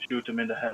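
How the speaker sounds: soft, leaned-in half-whisper. Voicing a character who leans in to another character: half-whispering. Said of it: "lean into Teak and whisper".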